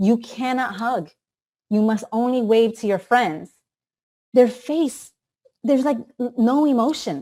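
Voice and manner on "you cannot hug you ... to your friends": very stern, strict teacher voice. Speaker who visits daycares quotes what the children hear from teachers, mock-stern teacher voice. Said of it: "in a very stern voice".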